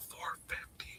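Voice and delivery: barely voiced, hushed whisper. Repeating a price to the ladies and gents, the speaker whispers it. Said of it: "I'm whispering it".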